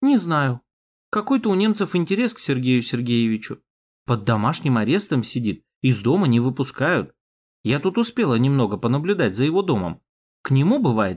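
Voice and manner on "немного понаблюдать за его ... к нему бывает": ordinary delivery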